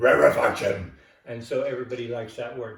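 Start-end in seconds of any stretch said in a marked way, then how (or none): 0.0-0.9 furious, very loud, angry barking shout. Teaching a wave term, saying the word: said like you're mad. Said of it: "if you say it like you're mad".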